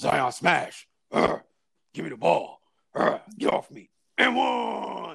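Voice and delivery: rough, creaky, ground-out brute voice. Describing a hilarious clip of Zion to a friend, doing the Hulk voice. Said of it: "that's the Hulk voice".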